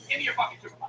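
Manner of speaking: acted, mad, whispered and breathy. Retelling a call, demanding the supervisor: retelling an angry demand. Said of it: "So I'm fucking mad".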